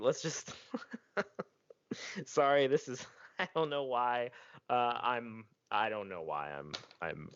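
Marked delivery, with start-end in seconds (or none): 0.0-4.3 pitched-up voice, talking through giggles. Apologizing mid-sentence while recording, laughing while talking. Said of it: "I'm laughing".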